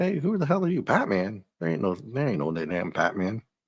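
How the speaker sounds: aggressive, brash, hot-headed delivery. Retelling a comic scene, voicing a guy who doubts batman: imitating a hot-headed guy. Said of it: "a little hot-headed".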